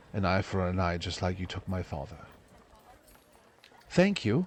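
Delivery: low and utterly cold. Voicing a character who has just carved out an eye: emotionless, flat delivery. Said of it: "with almost no emotion in his face goes".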